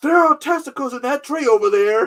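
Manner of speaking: very high, shrill, loud, frantic screaming. Recalling a favorite movie line, a cop yelling to his captain: retelling a scream. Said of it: "He's screaming about testicles".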